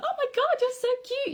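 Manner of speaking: very high, squeaky dog-mum voice. Speaker showing how to excite a dog that isn't food-motivated: squeaky dog-mum voice. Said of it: "your really squeaky voice".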